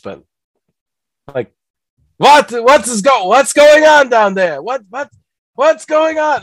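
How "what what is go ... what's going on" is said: bad comic voice, shrill, high and loud. Pitching the big scary idol at the top of the volcano: Mel Brooks voice. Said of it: "a good Mel Brooks voice".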